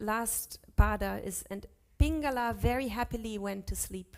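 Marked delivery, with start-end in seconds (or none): none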